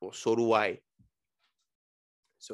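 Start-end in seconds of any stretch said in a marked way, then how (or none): 0.0-0.8 imitated Polish accent. Retelling a story, quoting a polish beer maker: imitating a polish accent. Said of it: "so he has an accent".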